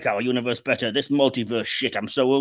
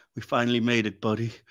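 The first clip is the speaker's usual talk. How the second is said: earnest, solemn, deeply sincere delivery; 4 dB quieter than usual. Retelling the movie's last scene at the Statue of Liberty: earnest solemn Tom Hardy impression. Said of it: "in the most earnest solemnness".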